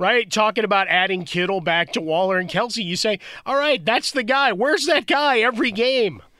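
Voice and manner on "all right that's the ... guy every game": bad observational-comedy delivery, each line rising. Voicing a fan's complaint about a player, Jerry Seinfeld voice rising. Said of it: "I know I sound like Seinfeld".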